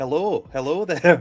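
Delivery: put-on speaks with Scottish accent. Imitating a game character who sounds Scottish: Scottish Obi-Wan voice. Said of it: "and he's like".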